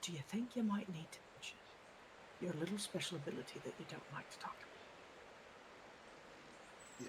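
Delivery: hushed, fast, very quiet whisper. In a game, a player speaks to their second lieutenant so no one else hears, very quietly. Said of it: "I'm going to very quietly".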